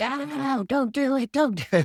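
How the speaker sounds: put-on high, loud, shrill, drawn-out toddler scream. Retelling calling Santa while the three-year-old protests: imitating Brody screaming.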